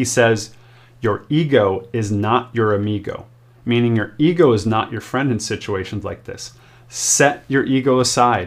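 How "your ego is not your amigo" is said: ordinary talk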